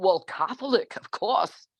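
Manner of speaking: put-on elderly English accent. Speaker quotes her father answering her question about religion, imitating her English father. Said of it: "I always do his voice".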